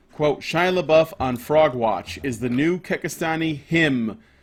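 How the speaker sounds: plain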